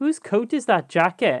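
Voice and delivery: broad Welsh accent, laid on. Speaker demonstrates a particularly welsh phrase, with a strong welsh accent. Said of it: "It really comes through".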